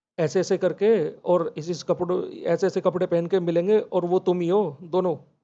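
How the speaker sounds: ordinary delivery, nothing marked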